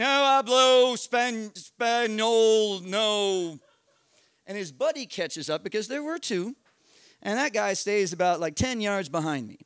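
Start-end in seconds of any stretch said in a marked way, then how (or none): 0.0-3.6 loud, put-on dumb, clueless act with drawn-out no. Retelling being yelled at by a man with a gun, retelling playing a dumb gringo. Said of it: "I'm going to play the dumbest gringo ever".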